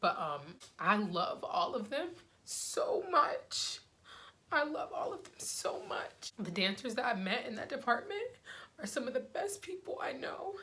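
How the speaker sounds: choked up, emotional voice on the edge of crying. Asked what they miss from before the pandemic, remembering the dance department, emotional, near tears. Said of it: "I didn't know I was gonna get emotional".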